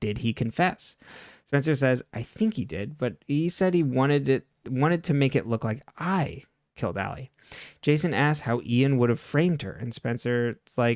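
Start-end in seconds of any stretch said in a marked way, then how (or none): none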